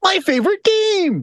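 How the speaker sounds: cackling laughing-skull voice, very high and gleeful. In a game, speaking to a weapon before throwing it: cackling laughing-skull voice. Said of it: "cackling almost like in your laughing skull voice".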